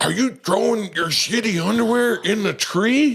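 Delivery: shrill, furious scolding. Retelling what a man said when he came over to him: imitating an angry man. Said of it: "he was so mad".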